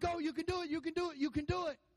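high, screaming cheer of encouragement. Retelling watching a fight: retelling screaming encouragement. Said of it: "And I'm screaming like".

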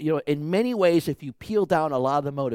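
ordinary delivery

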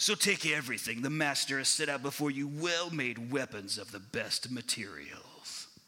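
angry announcer voice, grudging and resentful. Imagining Paul as a radio guy angry that he is made to read this, mock-angry Westwood One Radio guy. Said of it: "He sounds like he's really angry that they're making him read this".

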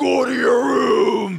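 rough, raspy, booming, slow, drawn-out yell. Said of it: "Batman voice".

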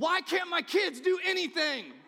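piercing, very loud, very high full-volume scream. Retelling a moment of helping a child wash hands: imitating own past scream. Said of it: "I scream".

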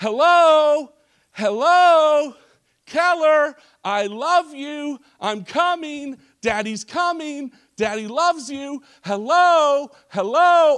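high, loud yelling at the top of the voice. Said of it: "I started yelling at the top of my voice".

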